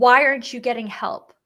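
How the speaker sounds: loud screamed delivery. Retelling what a psychologist said to the group: imitating someone screaming. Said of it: "She screamed at us and said".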